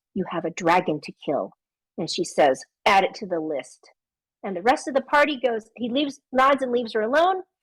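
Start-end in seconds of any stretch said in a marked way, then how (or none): 0.1-1.5 very soft, hushed, low murmur. Retelling a game session, a character reminds her of her task: very soft voice. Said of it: "in a very soft voice".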